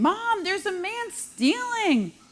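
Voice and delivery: put-on high slow child's scream. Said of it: "he's screaming".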